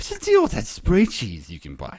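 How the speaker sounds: swooping, pitch-swinging stand-up comic voice. Riffing on a movie scene with others: Paula Poundstone imitation. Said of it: "Classic Paula".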